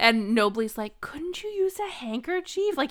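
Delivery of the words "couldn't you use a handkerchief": high-pitched, fed-up, totally over it. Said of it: "he's just so over it".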